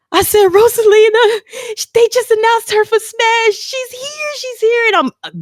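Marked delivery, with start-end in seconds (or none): 0.4-4.8 mock crying, high-pitched, tearful bawling. Retelling telling a best friend about the announcement: retelling bawling. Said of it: "bawling my eyes out, crying".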